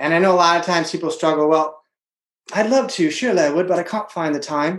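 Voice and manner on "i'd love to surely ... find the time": horrible, deliberately bad put-on English accent. Acting out people's common excuse about finding time, horrible english accent. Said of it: "that's my horrible English accent".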